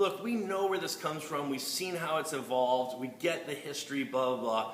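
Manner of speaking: usual speaking voice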